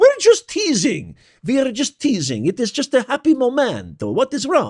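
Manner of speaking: bad, put-on French accent, very high-pitched. Acting out people who keep dismissing it all as conspiracy theory, in a terrible French accent. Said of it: "It's a terrible French accent".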